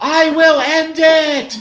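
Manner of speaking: very high, loud, shrill, drawn-out terrified scream. Voicing a character who screams back at a goblin's voice: terrified scream. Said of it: "in terror, I'll just scream out".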